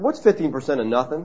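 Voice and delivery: teasing tone. Retelling asking a waiter to add up a bill, retelling teasing a waiter. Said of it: "He knew I was teasing him".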